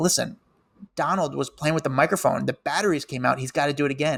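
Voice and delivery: ordinary talk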